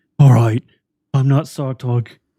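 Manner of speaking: very loud, mock-tearful delivery. Describing a man who wipes away a tear, imitating a tearful confession. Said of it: "a tear comes to his face".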